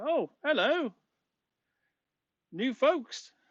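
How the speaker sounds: very high, sunny, very cheery, drawn-out delivery. Narrator voicing someone behind the bar greeting newcomers, very cheery voice. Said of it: "you hear a very cheery voice say".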